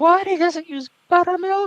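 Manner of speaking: very high-pitched, put-on, feigned innocent voice. Retelling what a mother said, knowing exactly what she was doing: imitating mom playing dumb. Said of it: "I'm just doing the voice that like she did, and it's like this. This is the kind of voice she does when she like f- plays stupid".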